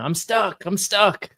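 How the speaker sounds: mock, very high, stretched-out calling yell. Retelling being pinned by drywall, imitating own past yelling. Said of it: "So I'm sitting there yelling".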